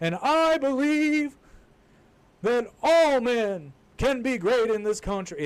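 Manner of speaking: speech-making, slow and loud. Mocking a politician's speech with a Martin Luther King impression: Martin Luther King impression. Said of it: "lapsed into a Martin Luther King impression".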